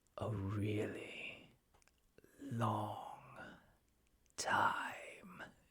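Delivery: gravely serious, slow, unhurried delivery. A man moves close to Mike and answers him in a gravely serious, slow voice. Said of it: "with a gravely serious, slow voice".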